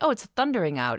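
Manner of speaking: ordinary talk, nothing marked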